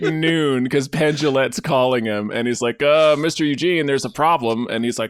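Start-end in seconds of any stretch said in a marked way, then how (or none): none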